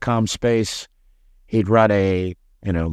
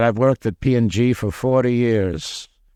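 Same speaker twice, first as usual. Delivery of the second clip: put-on heavy Dutch accent. Retelling a phone call with a job reference: imitating a heavy dutch accent. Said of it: "heavy, heavy Dutch accent".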